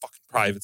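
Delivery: mock muttering under breath. Retelling a drill sergeant stomping over after a shooting, imitating muttering under breath. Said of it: "like muttering under his breath".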